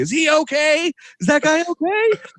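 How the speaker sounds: acted very high-pitched worried screaming, rising. Retelling someone yelling at a bus driver, retelling a scream. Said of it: "just screaming".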